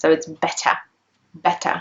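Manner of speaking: British pronunciation with crisp T in better. Showing a learner the British way to say it: crisp T in better. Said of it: "You can hear the T sound".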